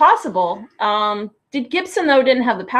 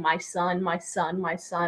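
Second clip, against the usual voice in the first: impassioned, full of feeling, slow and drawn out; 3 semitones lower, 11 dB quieter than usual. Retelling a scene from the episode: passionate Mulder impression. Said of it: "and he's so passionate".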